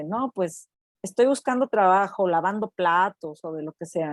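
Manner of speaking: usual speaking voice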